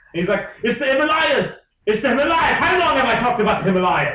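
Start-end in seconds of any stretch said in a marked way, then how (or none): 0.6-2.5 put-on weird pitched-up German accent. Act out the movie's train station goodbye scene, in Brad Pitt's really weird German voice. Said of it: "he has this really weird German voice".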